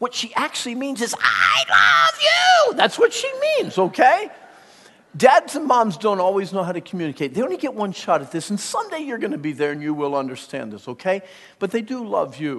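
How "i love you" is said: play-acted very high, shrill, swooping, upset scream. Explaining what an upset mom really means, mimicking a screaming mom. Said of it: "she's screaming at you".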